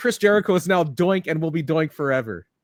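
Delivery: plain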